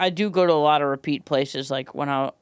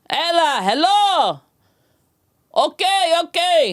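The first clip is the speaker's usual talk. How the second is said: mock shouting, higher and louder; 5 dB louder than usual. Retelling how dad sounded on the phone: imitating dad sounding like in a fight. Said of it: "he'd sound like he was in a fight every time".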